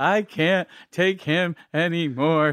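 high, drawn-out tearful wail, near hyperventilating. Retelling how a crying nun gave up on a child: imitating a nun crying. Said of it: "the nun's almost hyperventilating in tears".

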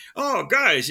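bad New York accent, pitched slightly high. Imagining how Jack Kirby would react to the movie: attempted New York accent as Jack Kirby. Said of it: "I can't do a New York accent".

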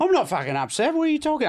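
very high, put-on Australian accent. Improvising a 911 call as a stabbed caller, in australian accent. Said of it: "I'm doing Australian now".

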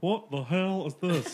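imitated slow drawl.

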